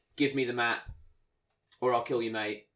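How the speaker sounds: ordinary delivery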